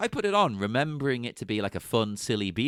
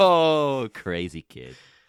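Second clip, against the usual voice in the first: fond, warm fatherly voice, a bit louder; 3 semitones higher, 8 dB louder than usual. Retelling a daughter putting ice cream on his face: imitating Arnold, fond.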